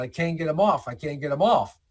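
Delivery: ordinary delivery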